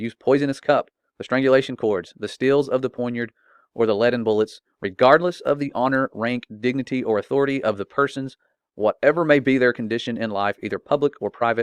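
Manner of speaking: ordinary talk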